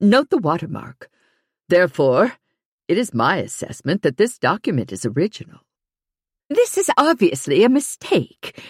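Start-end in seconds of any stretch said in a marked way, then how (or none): 6.5-8.6 wavering voice, forced steady, strained calm, pitched up. A character rejects an expert's assessment of a document, voice wavering, straining to stay calm. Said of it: "Betsy's voice is wavering, straining to remain calm".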